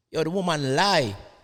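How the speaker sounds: very loud, high, put-on Jamaican accent. Weighing in on a particular situation in a Jamaican accent. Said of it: "in my best Jamaican voice".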